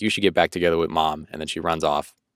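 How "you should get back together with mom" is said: ordinary talk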